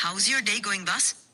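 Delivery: English spoken with a Bengaluru accent. Answering a user who asked to talk in a Bengaluru accent. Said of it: "Let's switch to a Bengaluru accent".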